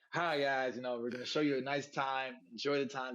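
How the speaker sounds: normal talking voice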